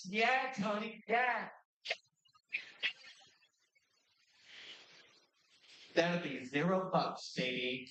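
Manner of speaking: put-on smug, cool-guy voice. Describing pointing at yourself in the mirror, acting cool to self in mirror. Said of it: "pointing at myself in the mirror and going like".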